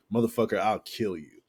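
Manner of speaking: usual speaking voice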